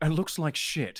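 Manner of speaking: put-on, imitated British man's accent. Standing in as the mean judge, the speaker does this imitating Connor, British accent. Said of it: "I'm channeling my inner uh, British guy".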